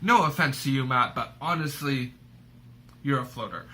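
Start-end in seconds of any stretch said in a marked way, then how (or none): none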